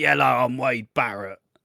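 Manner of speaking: put-on Manchester English accent. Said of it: "I don't know why I'm doing an accent".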